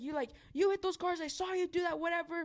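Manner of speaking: ranting, accusing yell. Retelling an angry man's accusation at midnight: imitating a man yelling. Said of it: "the guy just keeps on yelling".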